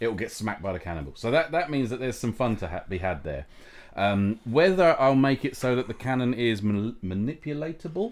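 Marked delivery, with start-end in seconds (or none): none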